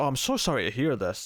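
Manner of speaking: acted coy, innocent-sounding manner. Retelling a scene where a character plays coy: imitating someone playing coy. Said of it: "G'Kar's playing very coy".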